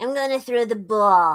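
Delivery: put-on New York accent sounding Boston. Trying a Fauci impression after saying the New York accent won't come: bad Fauci impression, sounding Boston. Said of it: "more Boston. That's not it".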